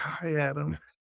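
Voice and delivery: high, mild mock yell of a starstruck fan. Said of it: "I was, like, yelling out the window".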